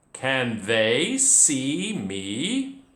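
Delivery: drawn-out rising pitch on "me". Reading a story aloud and showing how a question sounds, rising question intonation. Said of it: "how my voice changed a little bit there with the question".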